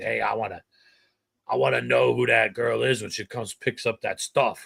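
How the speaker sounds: put-on heavy Boston accent. Quoting her front desk person, who is from Boston: heavy Boston accent. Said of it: "heavy Boston accent".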